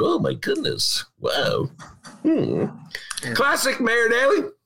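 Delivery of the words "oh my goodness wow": slow, drawn-out news anchor-style exclamation. Imagining a TV anchor watching a live vaccination: imitating Anderson Cooper. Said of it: "While Anderson Cooper like".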